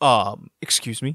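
put-on deadpan, straight-faced delivery. Retelling a man's reply to two women, imitating a straight-faced reply.

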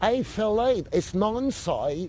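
put-on very strong British accent, laid on, high, slow. Retelling a woman's phone call from England: imitating Nancy's strong British accent. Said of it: "she had adopted a very strong British accent".

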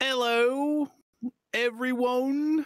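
put-on halfling cleric accent. Playing a character disguised as a halfling cleric: Tyler Pureheart accent. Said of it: "here's my accent".

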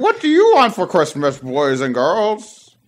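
big, animated, festive sing-song voice, wide pitch swings. Speaker greets the boys and girls in a pretend game; Santa Claus voice. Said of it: "That's how Santa sounds in my".

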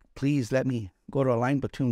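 acted pleading, begging tone. Recalling pleading to be sent to a line platoon, acting out begging. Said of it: "and I begged".

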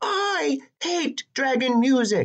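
yelled outburst, high-pitched. Narrator reads a princess's reply when the radio is turned on, shouted. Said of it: "But the princess shouted".

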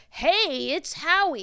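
casual, relaxed, offhand delivery. Retelling a phone call on a podcast, imitating Howie Mandel. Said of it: "Great imitation".

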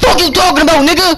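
furious shouting.

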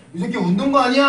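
loud, high, stern mock bark.

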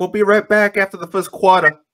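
very loud, fast, really bad New York accent. Mocking how the Raptors announcers sounded, in a really bad New York accent. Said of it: "a really bad New York accent".

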